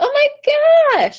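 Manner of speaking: thrilled, very high and very loud excited burst. Explaining chest and head voice, the speaker gives an example: really excited. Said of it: "when I get really excited".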